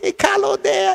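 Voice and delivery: tiny, squeaky voice pitched very high. Act out the hitman knocking on your door while you hide, in Colin's little squeaky voice. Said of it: "He had one of them little squeaky voice".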